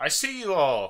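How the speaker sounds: big, loud voice booming out. Voicing Harold calling out to the players' group: Harold's booming voice. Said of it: "his voice that booms out".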